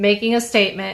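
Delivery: plain reading voice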